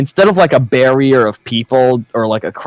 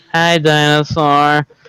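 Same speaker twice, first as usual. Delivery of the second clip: put-on flat, dead-level toddler voice with no inflection; 3 semitones higher than usual. Describing a two-year-old at a movie greeting a dinosaur, imitating a child's monotone. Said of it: "in the most monotone voice".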